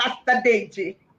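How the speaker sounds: put-on, mock Ghanaian accent and pronunciation. A host welcoming a guest pastor, in a put-on Ghanaian accent. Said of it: "let me sound like a Ghanaian".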